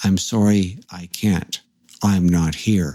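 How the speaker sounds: put-on deadpan, flat monotone. Retelling a strange phone call to a girlfriend: imitating a deadpan voice. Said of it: "you spoke in a deadpan voice".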